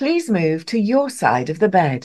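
recorded, automated bus announcer voice. Asked to do their bus voice, the speaker performs it: bus announcement voice. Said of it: "in my bus's voice".

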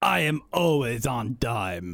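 raspy, somewhat Jamaican troll voice. Reading a troll's line from the script, raspy, somewhat Jamaican troll voice. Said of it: "It's a somewhat Jamaican but raspier".

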